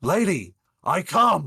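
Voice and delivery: very loud, booming, high, swooping bellow. Narrating a scene, the speaker voices Reggie calling out to Sarissa, bellowing. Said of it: "and he bellows".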